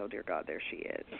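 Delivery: soft groaning, pitched low. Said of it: "I would think".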